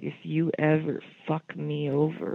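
put-on very serious tone. Retelling a threat made right in one's face: imitating someone getting super serious. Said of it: "he got super serious in my face".

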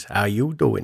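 charming, cheeky voice. Speaker asks a guest whether she uses it, then does Joey from Friends voice. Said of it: "do you use the Joey voice out of friends".

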